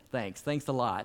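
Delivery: a touch of sarcasm, lightly sarcastic delivery. Imagining Jesus looking up at the hole in the roof: mock sarcastic Jesus. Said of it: "maybe he was a little sarcastic".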